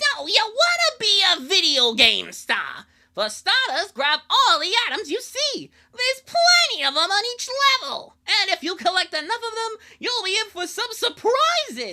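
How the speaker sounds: high, booming, very loud cartoon character voice. Playing a video game, voicing the on-screen character in a Bubsy cartoon voice. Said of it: "I could try the Bubsy three D voice".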